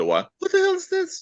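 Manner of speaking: put-on squeak, voice jumping up two octaves. Retelling a character's startled line: imitating a voice jumping two octaves. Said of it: "his voice went up, like, two octaves".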